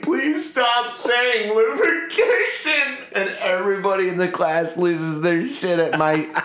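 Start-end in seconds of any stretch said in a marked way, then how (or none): 0.0-3.0 very high, drawn-out pleading through tears of laughter. Speaker retelling a class where a guy kept saying lubrication, retelling crying laughing. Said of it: "I'm crying laughing and I'm like".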